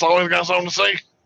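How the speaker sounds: heavy smoker's way of talking. Speaker describes an acquaintance to a co-host, imitating JT's smoker voice. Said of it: "J T talks like this with the cigarettes".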